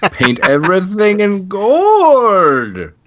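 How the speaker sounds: very high, shrill, swooping comic voice, gold drawn out. Reacting to another speaker's story, doing an Austin Powers impression. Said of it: "prospector impression right there?".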